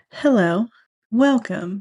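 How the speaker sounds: fancy announcer-style voice. Greeting listeners at the start of the podcast: fancy voice. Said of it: "try and sound like one of those, like, fancy voice things".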